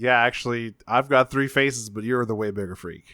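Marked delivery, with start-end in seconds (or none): none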